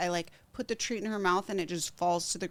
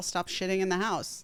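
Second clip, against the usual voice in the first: normal talking voice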